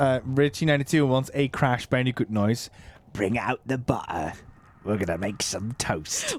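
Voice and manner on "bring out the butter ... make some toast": British-sounding voice, much lower pitch, much quieter. Answering a viewer's request for a Crash Bandicoot noise, Crash Bandicoot impression. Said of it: "Why has he gone British?".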